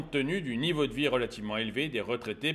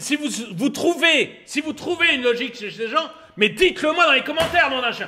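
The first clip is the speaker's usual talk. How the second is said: getting angry and irritated, much higher; 13 semitones higher, 9 dB louder than usual. Video commentator addressing his viewers, getting angry. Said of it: "je m'énerve".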